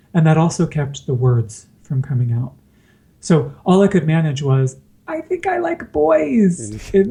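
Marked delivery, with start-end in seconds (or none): 5.1-7.1 very high, squeaky little voice, swooping, drawn out. Retelling what they squeaked out to their mom in the car, high-pitched squeaky voice. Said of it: "in this very high pitched uh, squeak, squeaky tone".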